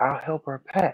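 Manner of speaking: mock guileless, innocent, childlike tone. Retelling how Bishop Don Magic Wand answered: imitating an innocent, childlike tone. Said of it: "but he said it innocent like a child".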